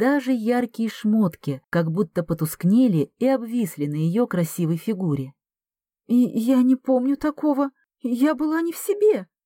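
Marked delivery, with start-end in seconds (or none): 6.1-9.3 scared, frightened mumble, climbing higher. Ksenia speaks to Garik on the sofa: frightened muttering. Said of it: "испуганно бормотала Ксения".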